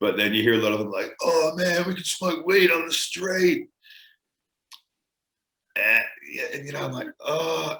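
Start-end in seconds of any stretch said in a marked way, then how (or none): 1.2-3.7 put-on very high-pitched, slow, drawn-out Australian accent. Speaker quoting Australians they have heard, in an Australian accent. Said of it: "when I hear an Australian accent".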